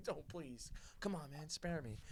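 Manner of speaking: put-on tearful crying voice, pleading tone. Retelling a panicked moment, imitating a crying plea for mercy. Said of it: "I'm gonna start crying and be like".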